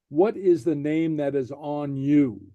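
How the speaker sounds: ordinary delivery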